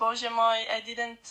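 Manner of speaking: ordinary delivery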